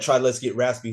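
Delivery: ordinary talk, nothing marked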